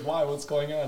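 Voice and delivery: normal talking voice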